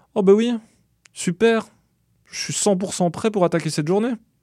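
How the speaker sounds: heavily ironic, acted-out delivery, pitched very high. The narrator replies to her teasing morning greeting, ironic tone. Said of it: "Je lui réponds d'un ton ironique".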